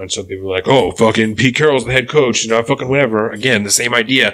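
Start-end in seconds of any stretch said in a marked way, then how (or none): none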